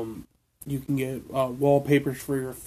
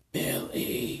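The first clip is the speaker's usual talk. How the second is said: creepy put-on gremlin voice, quieter; 6 dB quieter than usual. Imitating how Stripe says a name in the movie: creepy Stripe voice. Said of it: "That's creepy".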